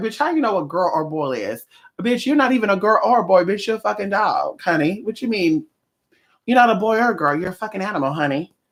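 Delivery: mouthy, sassy talking-back dog voice. Imagining what the dog would say back about being called a girl: voicing the dog Anubis talking back. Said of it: "He'll play that role like".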